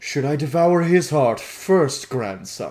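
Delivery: menacing, taunting, threatening creature voice. Voicing a clawed creature threatening to devour a heart: menacing monster voice. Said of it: "he just points his claw above Krios and just says".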